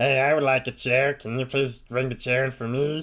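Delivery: muffled high imp voice. A storyteller voices an imp speaking from inside a bag: muffled imp voice. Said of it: "imp's muffled voice".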